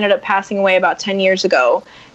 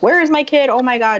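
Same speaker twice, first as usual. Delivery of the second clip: frantic, panicked, freaked-out voice; 4 semitones higher than usual. Retelling what a woman said on losing sight of a child, imitating someone freaking out. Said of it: "just freaking out".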